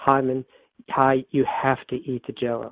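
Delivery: soft, kind, affectionate tone. Retelling the speaker's mother coaxing a man to eat Jello, retelling soft, kind affection. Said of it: "very softly and kindly and with a lot of affection".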